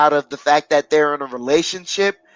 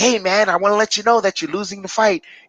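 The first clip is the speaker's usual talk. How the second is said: bright, chipper, cheery, upbeat tone; 4 semitones higher than usual. Demonstrating a corner tone that doesn't sound genuine, cheery tone. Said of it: "Do you want to sound cheery while you're telling a fight?".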